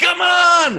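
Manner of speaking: put-on high, loud, impatient New York accent shout. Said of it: "The New Yorker's like".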